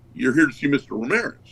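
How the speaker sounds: ordinary talk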